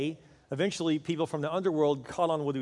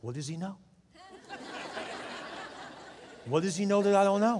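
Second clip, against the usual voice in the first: mock shocked disbelief, higher pitch; 4 semitones higher than usual. Speaker recounts a man's inner reaction to what he heard; retelling shocked disbelief. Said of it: "he was shocked".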